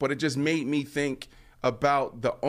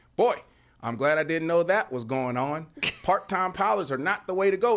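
put-on Texas accent; 3 semitones higher than usual. Quoting Jerry Jones on the players' flight: put-on Texas accent as Jerry Jones. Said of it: "What accent is that?".

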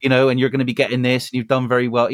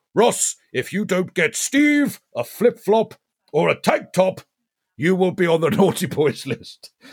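jolly, higher-pitched character voice; 6 semitones higher than usual. Demonstrating a voice while addressing Ross, in a Santa voice. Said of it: "So that's my Santa voice".

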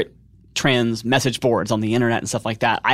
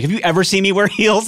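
high, playful, jokingly defensive tone; 8 semitones higher, 4 dB louder than usual. Retelling a reply to a guy who joked about breaking a heel: jokingly defensive. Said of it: "I got like so like jokingly defensive".

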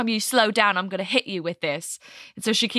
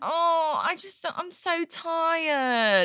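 put-on whine, much higher pitch; 8 semitones higher than usual. Retelling a tired woman's answer to her trainer: mock-whiny Sasha imitation. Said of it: "It's just it's just whiny".

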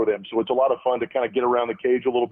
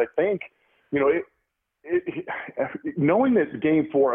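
slow, halting, slightly stumbling stutter; 4 semitones higher than usual. Thinking aloud while answering the other speaker, stuttering a little. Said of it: "I'm kinda stuttering a little bit".

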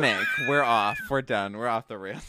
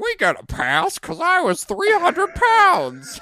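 put-on voice, very high, loud and swooping; 6 dB louder than usual. Quoting what Bean always says, done in a Bean voice. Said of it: "I'll do my Bean voice".

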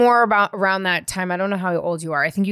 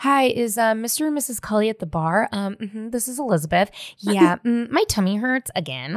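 put-on halting, childlike young kid voice; 4 semitones higher than usual. Retelling calling the yacht club to be picked up: imitating herself as a kid. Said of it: "calling the yacht club, being like".

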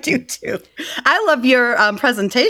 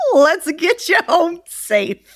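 put-on high old country farmer voice; 5 semitones higher than usual. Retelling how a driver offered a ride home, the speaker does an old farmer voice. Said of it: "Sounds like an old farmer".

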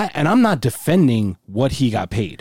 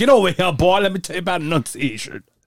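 put-on Southern accent, yelling, much higher pitch; 6 semitones higher than usual. Joking about how the other speaker's father scolded him, mock-yelling in a Foghorn Leghorn voice. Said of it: "Is that when he's yelling at you?".

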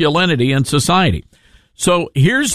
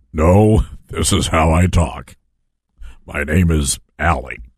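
very deep, low put-on disguise voice; 12 semitones lower than usual. Retelling a passenger's reply when asked about her voice, put-on really deep voice. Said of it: "Your voice is really deep".

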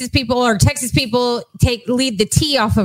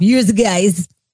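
mobster-like Russian accent; 4 semitones lower than usual. Attempting a jersey phrase, the speaker ends up sounding like a russian mobster. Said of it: "you sounded like a Russian mobster".

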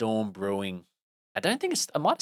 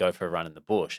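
ordinary talk

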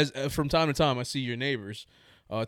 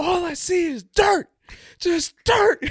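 screaming as loud as possible, very high, shrill, drawn out; 9 dB louder than usual. Retelling being asked what was seen while digging: imitating own screaming. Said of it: "I scream as loud as I can".

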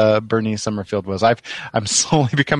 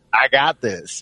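put-on Southern gentleman voice; 2 semitones higher than usual. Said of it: "Southern gentlemanly".

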